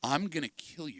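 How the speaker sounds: quiet, calculated menacing tone. Showing the scary calm way to threaten: calm, quiet, calculated threat. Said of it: "The calm, quiet, and calculated".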